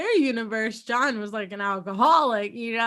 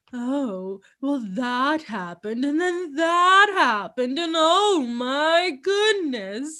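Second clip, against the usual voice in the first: put-on slow, old, wealthy gentleman's voice and manner. Imitating how the alternate universe Sam talks: imitating an old rich man. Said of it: "he talks like an old rich man".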